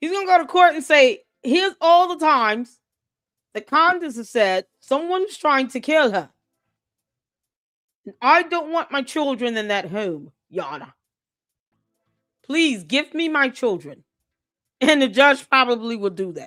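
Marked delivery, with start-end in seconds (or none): 1.4-14.0 practised, earnest put-on British accent. Acting out what George will say in court, George's British accent. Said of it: "I've been working on my British accent".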